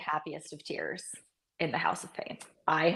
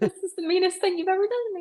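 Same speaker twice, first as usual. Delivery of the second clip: put-on crying, higher; 13 semitones higher than usual. Retelling being woken as a child to watch a loss: imitating own past crying. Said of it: "crying to my mom going".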